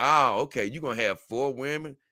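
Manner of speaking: normal talking voice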